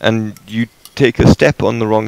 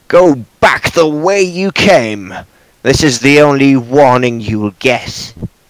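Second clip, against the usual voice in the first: harsh, slow, rough-sounding voice; 4 semitones higher than usual. Voicing a hidden figure warning intruders away: harsh voice. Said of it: "a harsh voice calls from the shadows".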